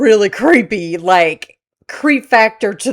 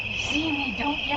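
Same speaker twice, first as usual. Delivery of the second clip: put-on creepy old lady voice, higher and quieter; 6 semitones higher, 14 dB quieter than usual. Retelling a trail camera clip of a woman: imitating a creepy old lady. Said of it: "this creepy old lady go and go".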